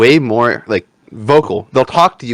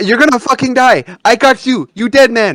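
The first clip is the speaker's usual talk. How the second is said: put-on fake Chinese accent, higher; 12 semitones higher than usual. Retelling how a gaming buddy taunts enemies: imitating a put-on Chinese accent. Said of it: "he always throws on a Chinese accent".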